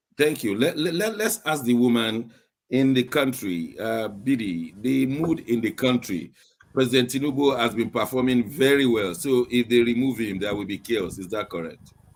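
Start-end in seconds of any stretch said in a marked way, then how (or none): none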